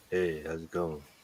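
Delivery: deliberately deepened, low voice. Unhappy with how their recorded voice sounds, trying out a deeper voice. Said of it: "Maybe I should talk deeper".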